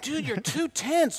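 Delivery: high, loud scream. Retelling the director yelling during a helicopter shoot: imitating Jeff screaming. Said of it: "Jeff is screaming at me".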